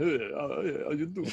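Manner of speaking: casual, mush-mouthed, words mushed together. Imitating a guest's greeting as a Stallone impression. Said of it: "his best unintentional Stallone impression".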